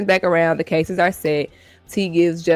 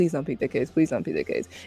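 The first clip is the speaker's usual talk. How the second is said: play-acted, desperate pleading tone; 4 semitones lower, 8 dB quieter than usual. Acting out T silently begging him not to pick the case: imitating T pleading. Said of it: "she was begging, pleading with her insides".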